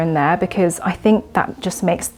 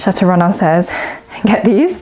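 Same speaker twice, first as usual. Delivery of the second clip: breathless, winded voice; 2 semitones higher, 5 dB louder than usual. Chatting to viewers, out of breath. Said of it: "I'm out of breath".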